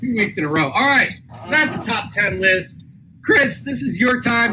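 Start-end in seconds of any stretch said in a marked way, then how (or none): 3.2-4.5 voice cracking and breaking mid-word. Host finishing the top ten list hands over to Chris, voice cracking. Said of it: "Did you guys hear my voice crack".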